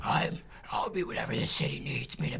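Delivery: gravelly made-up superhero voice. Redoing a movie line after being told to sound raspier: raspy Batman voice. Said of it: "You gotta make your voice more raspy".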